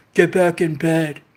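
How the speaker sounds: sudden menacing, scary, commanding voice. Retelling a voice heard after landing on the floor: imitating a scary voice. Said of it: "this scary ass voice".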